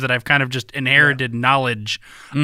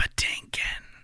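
put-on ghostly voice, quieter. Retelling a running joke from How I Met Your Mother: ghostly voice. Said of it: "there's this ghostly voice that goes".

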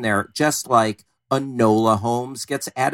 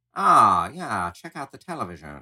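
put-on thirties-style mid-Atlantic accent; 2 semitones lower, 3 dB quieter than usual. Imagining people from the 30s watching television, in a put-on mid-Atlantic accent. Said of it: "with our mid-Atlantic accents and be like".

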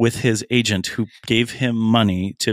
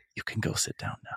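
whispered close, as if in the ear. Retelling what a hypnotist on stage said: imitating a whisper. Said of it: "he whispers in my ear".

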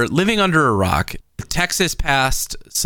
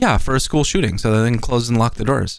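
mock offhand, innocent, matter-of-fact, quick nonchalant delivery; 3 semitones lower than usual. Retelling the niece's answer to her grandfather's question, in the most nonchalant voice. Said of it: "in the most nonchalant voice".

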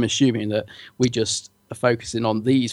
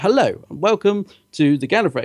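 put-on posh newsreader voice, pitched up; 6 semitones higher than usual. Podcaster describing how a TV character is acted, in a posh BBC reporter voice. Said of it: "It's very sort of posh".

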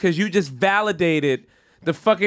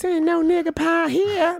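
put-on sweet, high small-girl voice; 10 semitones higher than usual. The speaker repeats a quoted line in a sweet little girl voice. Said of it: "with the sweet little girl voice".

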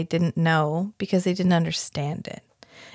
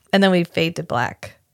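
ordinary talk

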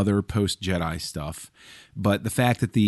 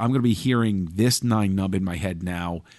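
ordinary talk

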